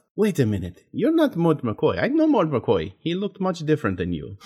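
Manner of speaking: put-on accent that sounds Dutch. A storyteller voices a person doubting the rescuer, in a Dutch-sounding accent. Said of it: "that sounded more Dutch".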